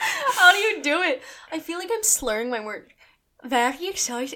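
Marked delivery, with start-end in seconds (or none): 3.4-4.4 strong, fully committed, full-on Irish accent. Trying the phrase again after being told it sounded Irish, fully Irish accent. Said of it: "Now it's 100% Irish".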